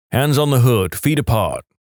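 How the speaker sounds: ordinary delivery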